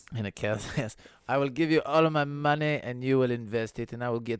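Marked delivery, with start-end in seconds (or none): 1.3-4.4 loud, fake French accent, half-lost. Acting out a Forex investment skit, in a put-on French accent. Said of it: "I'm losing the French accent".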